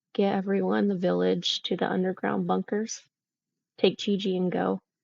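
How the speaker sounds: hushed, terrified voice giving out, fading away. A terrified character turns to Ringo, quiet voice fading out. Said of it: "very like quietly, like her voice is just kind of going out".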